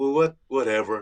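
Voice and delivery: imitated lackadaisical, indifferent tone. Describing how comics can act sometimes: imitating a lackadaisical attitude. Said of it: "like a lackadaisical".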